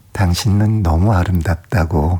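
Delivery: ordinary delivery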